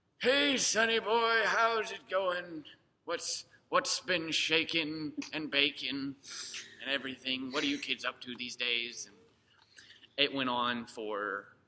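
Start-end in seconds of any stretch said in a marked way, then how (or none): 0.2-9.1 high, put-on elderly codger voice. Retelling how he got into character with no warning; imitating an old man. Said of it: "started being like".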